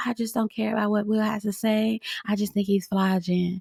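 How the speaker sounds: flat, dead-level monotone with no inflection. Acting out a confessional booth segment, Mika in a monotone. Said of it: "Mika again in a monotone voice".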